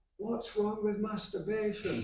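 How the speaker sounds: very high, very loud, shrill yelling shout. Retell how a female friend called out behind you in a big auditorium, imitating a friend shouting. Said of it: "she shouted".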